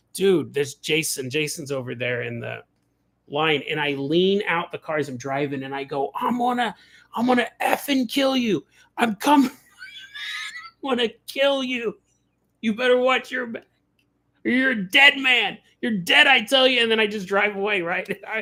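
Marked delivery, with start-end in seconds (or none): 6.1-16.8 goofy, high-pitched, joking threatening yell. Leaning out of his car at a man in line, retelling a joking yelled threat. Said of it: "goofy thing to yell in public".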